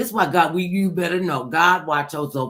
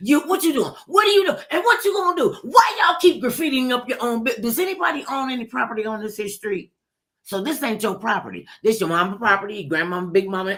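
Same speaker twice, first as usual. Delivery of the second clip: put-on high-pitched scolding rant; 6 semitones higher than usual. Standing on a porch step, retelling going off on everybody: retelling a scolding rant. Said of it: "And I just went off on everybody".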